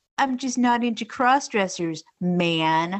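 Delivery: deliberately obnoxious, annoying, drawn-out voice. Quoting what a brother said, in an obnoxious voice imitating David. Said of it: "like in an obnoxious voice".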